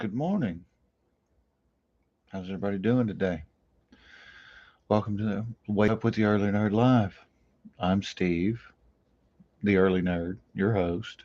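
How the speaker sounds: quiet talking. Host opening his morning live show without waking the house, talking quietly. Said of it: "I'm talking quietly".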